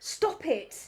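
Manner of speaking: genuinely cross, angry tone. Speaker telling off the ones who keep scrapping; real angry voice. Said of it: "you have to hear my angry voice".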